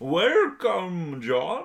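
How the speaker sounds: high, loud, eerie spooky host voice.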